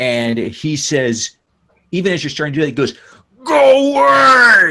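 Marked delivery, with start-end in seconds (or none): 3.4-4.7 shrieking yell, very high-pitched, very loud, shrill. Narrating a game, voicing Mr. Bear yelling at a player: Mr. Bear yelling. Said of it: "yells at you".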